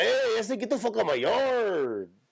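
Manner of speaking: put-on Mexican accent, voice way up high. Doing a bit on how groups sound: put-on Mexican accent. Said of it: "They always sound like that to me".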